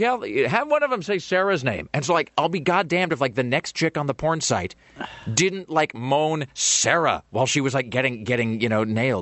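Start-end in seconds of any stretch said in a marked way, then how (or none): 0.0-1.9 mock playful, joking, pitched-up and sing-song. Speaker retells a suggestion made about the show, retelling a joking remark. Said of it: "I just said like real like jokingly".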